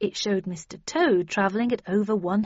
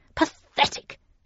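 hushed, high muttered word. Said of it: "she muttered".

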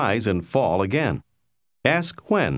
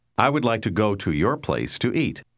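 plain

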